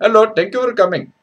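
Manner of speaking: badly put-on Punjabi accent, very high and loud. Showing off the bad accents you can do, greet someone in a bad Punjabi accent. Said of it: "the bad Punjab".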